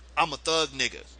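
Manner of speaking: normal talking voice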